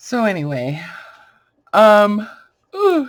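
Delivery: very loud, high yawn through ooh and um. Talking to viewers about a card, the speaker yawns mid-sentence. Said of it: "sorry, I'm yawning".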